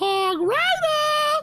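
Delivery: very high-pitched voice. A speaker says they can do a funny voice; high-pitched voice. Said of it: "I can do a high-pitched voice".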